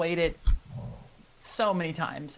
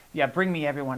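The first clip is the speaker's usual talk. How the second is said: usual speaking voice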